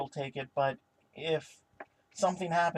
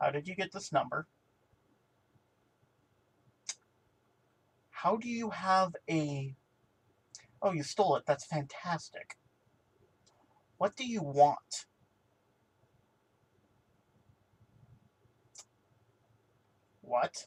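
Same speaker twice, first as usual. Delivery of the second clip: abrupt shift to a serious tone. Narrator voices Lydic answering a phone call, turning suddenly serious. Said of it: "his smile just disappears".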